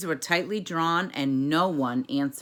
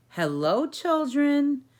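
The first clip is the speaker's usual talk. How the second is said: very high, sweet, sugary voice; 11 semitones higher than usual. Someone greets the children after footsteps in the hall: sweet voice. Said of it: "said in a sweet voice".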